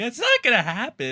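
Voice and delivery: mock jittery and unsure delivery, very high-pitched. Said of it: "he sounds so, like, jitty and fucking unsure of himself".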